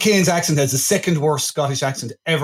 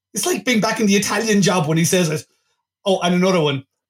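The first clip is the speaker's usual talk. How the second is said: plain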